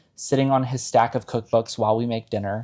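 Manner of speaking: ordinary talk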